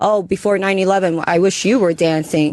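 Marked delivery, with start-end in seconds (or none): none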